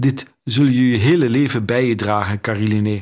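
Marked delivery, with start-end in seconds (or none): none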